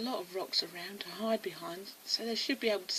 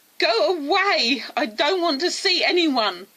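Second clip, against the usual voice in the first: very loud, furious and upset shout; 7 semitones higher, 15 dB louder than usual. Narrating a story, an unseen person answers Amy calling out: upset, angry shout. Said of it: "shouted the upset and now angry voice".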